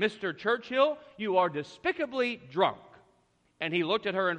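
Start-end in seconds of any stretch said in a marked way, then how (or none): 0.0-2.8 offended, huffy, indignant huffing. Retelling an anecdote where Lady Astor scolds Churchill: imitating a huffy voice. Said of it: "she said to him in this huffy voice".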